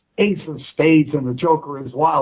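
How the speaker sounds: ordinary talk, nothing marked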